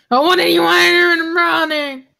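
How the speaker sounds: yelling. Asking another player what they want to do in the morning: yelling. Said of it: "You don't have to yell at me".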